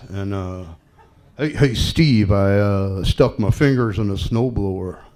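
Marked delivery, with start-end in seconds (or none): 1.4-5.0 put-on big dude's voice, lower pitch. Retelling a chat with designer Dennis Nordman: imitating Dennis Nordman. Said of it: "he kinda talks like this".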